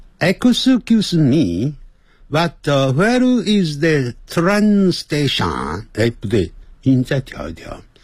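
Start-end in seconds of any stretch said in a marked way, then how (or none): 0.2-5.9 slightly Japanese accent, pitched up. Testing an adjusted voice on an English phrase, somewhat Japanese-sounding accent. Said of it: "刚才念的有点像日本人的声音".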